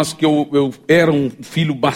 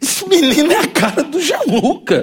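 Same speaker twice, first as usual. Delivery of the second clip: put-on, very high, indignant, outraged exclamation; 11 semitones higher than usual. Retelling what a woman said about a boy, retelling an outraged remark. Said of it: "num tom assim de muita revolta".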